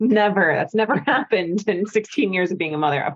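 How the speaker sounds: ironic, sarcastic tone meaning the opposite. Answering whether she ever wants her kids to leave her alone: sarcastic. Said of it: "Now I'm being sarcastic".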